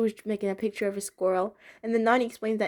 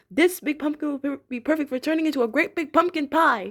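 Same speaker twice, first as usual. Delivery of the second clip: pitched-up traditional storybook pirate voice; 5 semitones higher, 4 dB louder than usual. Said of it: "talking in this traditional pirate voice".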